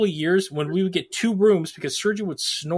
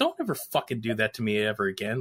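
mock mutter, quieter and lower; 7 semitones lower, 7 dB quieter than usual. Speaker retells what an interviewee said under his breath, imitating Adam muttering. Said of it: "we catch him under his breath saying".

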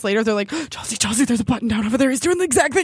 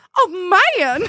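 put-on high cartoon chicken voice; 7 semitones higher than usual. A speaker recalls a little cartoon chicken who liked the rooster, in a cartoon hen voice. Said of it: "it was something with that voice".

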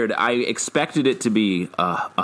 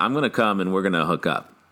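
ordinary talk

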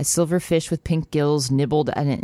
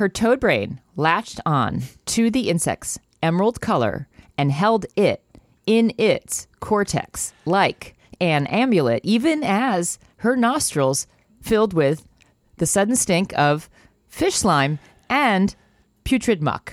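slow, drawn-out, early 2000s spoken-word reading style; 4 semitones higher than usual. Reading a passage from a book aloud for a joke: early 2000s spoken word reading. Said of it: "I had to read it in, like, a very nineteen, early two thousands spoken word".

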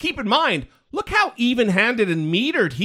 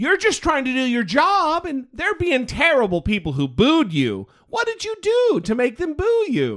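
put-on kindly cartoon grandmother voice; 4 semitones higher than usual. Trying her voice for a question after saying you can't; like a Disney grandmother. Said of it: "That was like a Disney grandmother".

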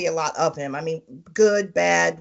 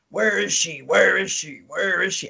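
raspy, rasping villain voice, repeated. Retelling a masked character's line during a fight: imitating a raspy deep voice. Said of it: "he's like".

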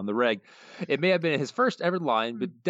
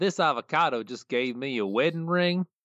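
dumb, dopey, dim-witted backwoods hillbilly voice. Asked by a co-host, the host reads a listener comment in the Cletus voice. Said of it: "I'll start out doing the Cletus voice".

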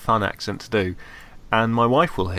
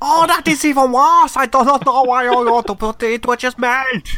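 put-on very high, very loud, furious German accent; 8 dB louder than usual. Asked for an angry German man's view on plastic robots: angry German man voice. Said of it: "angry German man, what do you think".

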